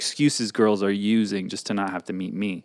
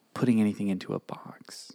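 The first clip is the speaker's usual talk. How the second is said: soft, partly unvoiced whisper. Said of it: "Okay, it's a secret".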